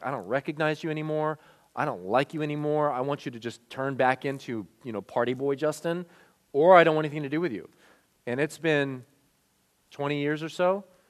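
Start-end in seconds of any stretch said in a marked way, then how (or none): 0.0-7.7 contemptuous, scornful, looking-down-on-you disdainful voice. Retelling what a former best friend said at lunch: imitating someone speaking with disdain. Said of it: "he looked at me with disdain".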